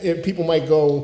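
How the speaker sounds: ordinary talk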